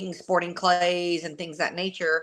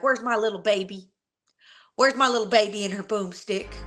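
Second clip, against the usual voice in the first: goofy, silly put-on dad voice; 3 semitones higher than usual. Recalling what their dad used to call them, imitating their silly dad. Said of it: "my dad's so silly".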